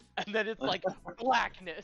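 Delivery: ordinary delivery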